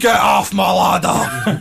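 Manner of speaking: mock furious, very loud, booming, drawn-out bellow. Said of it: "That was a total class Jack".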